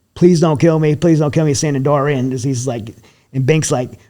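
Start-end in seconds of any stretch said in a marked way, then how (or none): 0.2-1.6 pleading, repeated begging voice. Retelling how a guy with a pistol at his head begged, imitating a man begging. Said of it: "He's like freaking out in the car".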